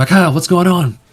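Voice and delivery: very high, loud, shouted yell. Voicing a halfling who bursts through the doors: yelling in character. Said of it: "he yells".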